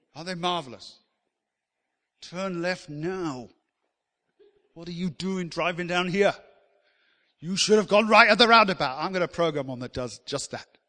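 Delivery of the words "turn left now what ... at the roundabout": loud, cranky, grumpy, bossy sat-nav voice. Imitating a sat-nav giving directions: grumpy, bossy sat-nav voice. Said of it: "a grumpy and bossy sat-nav".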